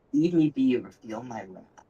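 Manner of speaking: rasping, raspy voice like a spirit from the grave. A storyteller voices a slain figure disturbed from eternal rest, warning intruders away, raspy voice. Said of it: "In a raspy voice".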